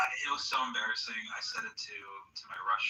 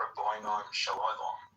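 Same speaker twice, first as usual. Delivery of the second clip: put-on English accent. Retelling how John said the phrase, in an English accent. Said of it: "like the English accent way".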